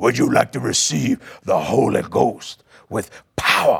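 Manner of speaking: low, real rough voice throughout. Retelling what a cross-eyed man asked you as he looked at you, in Wallace Key's real rough voice. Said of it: "he had that real rough voice".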